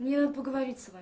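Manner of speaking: somber, gloomy funereal tone. Asked what happened with her friend, replying in a funereal voice. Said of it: "не таким же похоронным голосом".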